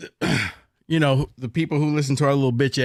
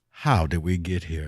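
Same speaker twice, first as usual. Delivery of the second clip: deep, very low, soft put-on voice; 9 semitones lower, 5 dB quieter than usual. Speaker asks a rhetorical question in a Morgan Freeman voice. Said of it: "in my Morgan Freeman voice".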